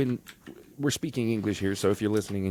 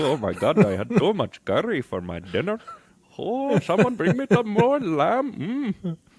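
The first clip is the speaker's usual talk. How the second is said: very high, shrill, loud burnt-tongue voice; 11 semitones higher, 6 dB louder than usual. Joking that spicy food changes how people speak: put-on burnt-tongue voice. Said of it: "you end up speaking like this no matter what you do".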